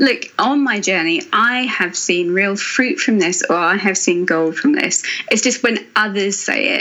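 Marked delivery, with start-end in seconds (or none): none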